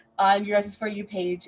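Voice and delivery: ordinary talk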